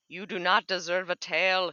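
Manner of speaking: in-character yell. Voicing Geico attacking another character's tail: Geico yelling. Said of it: "Geico yells".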